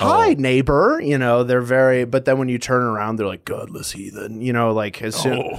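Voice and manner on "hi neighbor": high voice, over-enunciating every sound. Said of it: "It's like a theater kid. A lot of over enunciation".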